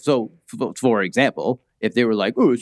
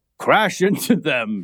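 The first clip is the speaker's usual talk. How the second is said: big, loud, booming voice; 2 semitones higher than usual. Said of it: "I'll use my big voice".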